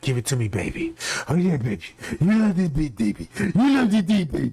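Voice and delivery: voiced stage half-whisper like bedroom pillow talk. Retelling leaked tape audio of a man, the speaker is imitating a half-whisper. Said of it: "it sounds like he just whispering".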